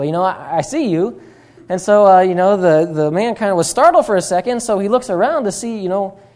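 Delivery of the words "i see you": slower, bad put-on parrot voice. Storyteller voicing a parrot that speaks up to a man, parrot voice. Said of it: "that's not a really great parrot voice".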